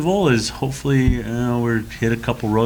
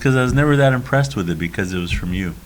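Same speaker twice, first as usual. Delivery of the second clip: ordinary delivery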